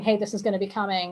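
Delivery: ordinary talk, nothing marked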